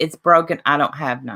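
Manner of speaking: ordinary talk, nothing marked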